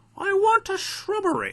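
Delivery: very high, daft comedy knight voice. Teacher telling the class a name reminds him of Monty Python, Monty Python voice. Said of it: "So I like to say it in that voice".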